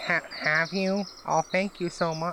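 thick, dripping, drawn-out, heavy sarcasm. Answering a character who asks where she's been and says he was worried, super sarcastic. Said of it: "I'm super sarcastic".

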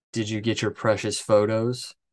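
normal talking voice

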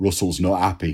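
put-on northern English Manchester accent. Quoting the agent's usual phone opener: Nick Linnan's Manchester accent. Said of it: "So that's my Manchester accent".

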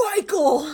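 strong, commanding, forceful, very high-pitched voice. Imitating him voicing Christine: imitating a stronger, forceful voice. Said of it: "uses a stronger voice than he has".

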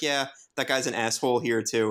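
ordinary talk

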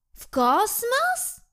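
very high, astonished, surprised tone. Narrating a giraffe echoing the jackal's question back to him, repeating in surprise. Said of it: "Powtórzyła zdziwiona żyrafa".

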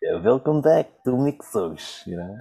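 put-on vampire accent, slow and drawn out. Practicing a voice the speaker admits still needs work, in a vampire-like voice. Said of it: "It sounds like a vampire or something".

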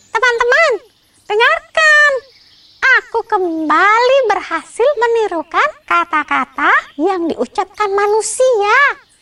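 loud, very high-pitched calling out. Back at the nest, Bebo calls out to friends, shouting loudly. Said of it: "teriak Bebo dengan lantang".

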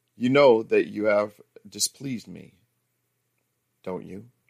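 firm, steady delivery. Reading a story, the speaker questions her about displeasing them, in a firm tone. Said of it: "I said in a firm tone".

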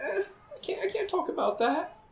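acted-out very high, soft, shy, bashful voice. Teasing the other speaker by imitating him: imitating a bashful refusal. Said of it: "You're bashful".

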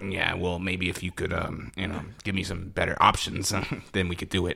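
low, rough, slightly creaky voice. Teasing the other speaker about giving better options, in a Charlie Sheen voice. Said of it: "That was Charlie Sheen".

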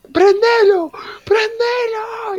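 very high, crazed, unhinged yelling. Telling friends about a woman in the classroom: imitating someone yelling. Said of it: "Y le gritaba así".

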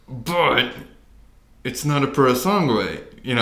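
words squeezed out through clenched, gritted teeth. Comparing cars in conversation, the speaker says it through clenched teeth. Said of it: "I say through clenched teeth".

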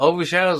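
ordinary talk

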